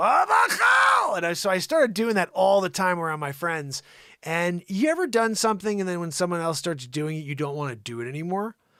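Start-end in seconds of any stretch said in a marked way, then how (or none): 0.0-1.1 put-on Russian accent, pitch shooting up high. Retelling the phrase he kept saying around his friends, Russian accent, rising pitch. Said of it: "And I'd start going".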